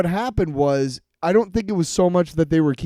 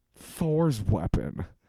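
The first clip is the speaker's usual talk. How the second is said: put-on repulsed, grossed-out, disgusted delivery; 6 semitones lower, 8 dB quieter than usual. Imitating how a line is delivered: imitating a disgusted line reading. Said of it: "He says it like somebody being disgusted by".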